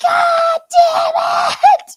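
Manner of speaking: shrill, very high, loud booming shouted outburst. Recalling how she yelled at them as kids when frustrated, imitating a loud booming yell. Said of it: "she has a loud, booming voice".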